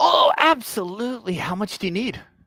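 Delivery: put-on shrill, high, loud old dwarf character voice. Game master voicing the forge's dwarf, answering a player's question, as a little old dwarf. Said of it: "the little old dwarf".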